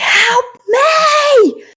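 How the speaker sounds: very high, loud, piercing scream, drawn-out me. Narrating a game scene, the storyteller voices the man with the knife, screaming. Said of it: "he just sort of like screams at you".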